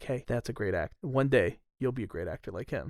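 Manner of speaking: secretive, hushed half-whisper, very soft, barely there. Retelling what was said behind the scenes into an actor's ear: imitating a half-whisper. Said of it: "he whispers into his ear".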